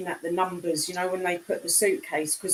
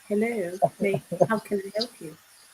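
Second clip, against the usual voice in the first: put-on posh telephone voice. On a panel, showing the voice put on to answer the phone, posh telephone voice. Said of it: "that's my uh, posh voice".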